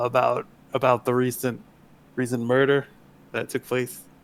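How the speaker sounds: quiet, dropped voice. Playing a character investigating strange happenings in the towns, in a lowered voice. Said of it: "and I sort of lower my voice".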